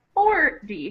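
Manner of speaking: forty stressed on first syllable. Contrasting fourteen and forty, stress on for in forty. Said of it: "has the stress on the first syllable. So it sounds more like forty".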